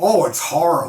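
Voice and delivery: imitated southern US accent. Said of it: "kinda southern".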